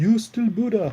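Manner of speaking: high-pitched, fake, put-on Japanese accent. The speaker retells a line from a talk with their mom, in a mock Japanese accent. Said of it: "that's not a Japanese accent".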